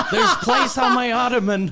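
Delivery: high, laughing, mocking put-on voice.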